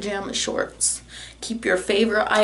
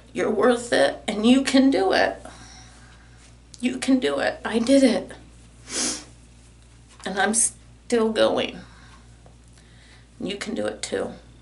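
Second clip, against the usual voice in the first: tearful, crying through the words. Ending a video by encouraging viewers, crying while speaking. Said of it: "I don't even know why I'm crying".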